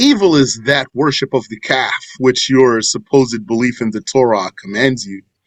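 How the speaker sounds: ordinary talk, nothing marked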